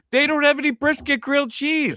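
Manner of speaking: mock, very high-pitched, hollered-out yelling outburst. Retelling how a guy ran into them and started yelling: imitating someone yelling. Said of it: "he just starts yelling at me".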